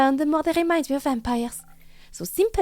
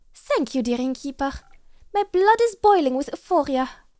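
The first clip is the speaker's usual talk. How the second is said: bad, horrid put-on French accent. Voicing a character talking to an innkeeper, horrid French accent. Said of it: "that horrid accent".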